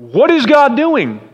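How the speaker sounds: pointed, blaming tone. Showing one of two ways to ask a question, mock-accusing question. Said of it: "You can ask it kind of like Gideon asked it. With an accusation".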